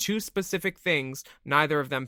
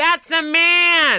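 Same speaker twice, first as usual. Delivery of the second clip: piercing yell, very high, very loud and shrill; 9 dB louder than usual. Retelling how the other speaker's mom yelled down a hallway: imitating someone yelling. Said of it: "your mom will yell down a hallway".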